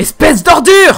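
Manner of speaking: very high, very loud, shrill screaming. Dubbing an anime scene, a line that must be screamed: shouting in character. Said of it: "Faut que je dise plus en criant".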